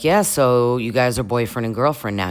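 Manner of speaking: ordinary delivery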